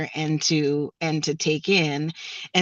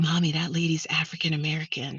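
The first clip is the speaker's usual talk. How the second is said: put-on little boy whisper, quieter; 6 dB quieter than usual. Retelling what a little boy said to his mom: imitating a little boy whispering. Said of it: "Sort of whispered it".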